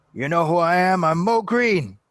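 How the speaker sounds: put-on mob boss character voice. Talking about an actor known for the original Godfather, do your Moe Greene impression. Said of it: "That's my Mo Green impression".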